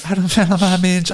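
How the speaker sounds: put-on Hopkinsville accent. Answering a listener question about the accent: Hopkinsville accent. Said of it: "speak in the Hopkinsville accent".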